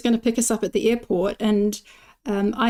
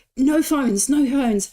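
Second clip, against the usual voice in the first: put-on angry officer voice, slow, firm, repeated; 4 semitones higher than usual. Retelling how an airport officer shouted about phones: imitating an officer shouting. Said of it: "he shouted at me".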